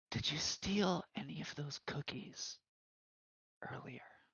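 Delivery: hushed, very quiet, close-up whisper. Leaning in close to another character, whispering. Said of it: "lean in close and whisper to him".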